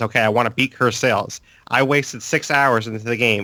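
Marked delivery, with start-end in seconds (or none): none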